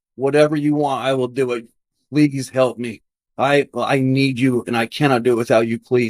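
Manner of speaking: acted desperate begging. Retelling own past prayer on her knees, acting out the desperate begging plea. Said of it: "and I'm begging".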